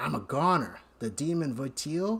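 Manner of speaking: ordinary delivery, nothing marked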